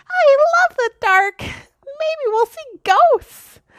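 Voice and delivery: squeaky voice pitched way up high. Reading a story aloud, the narrator voices Violet's line in Violet's squeaky voice. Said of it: "In a squeaky voice".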